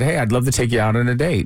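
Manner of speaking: ordinary delivery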